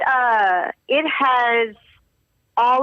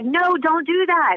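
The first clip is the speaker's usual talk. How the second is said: high, slow blurted protest no. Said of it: "I'd be like".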